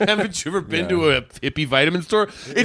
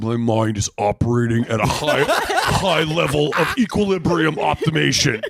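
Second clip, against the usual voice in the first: deep, puffed-up, self-important alpha-guy voice; 4 semitones lower than usual. Retelling a friend taking his jacket off: put-on alpha mindset voice. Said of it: "the alpha mindset voice".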